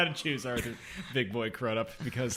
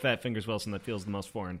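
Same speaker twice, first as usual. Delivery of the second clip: ordinary talk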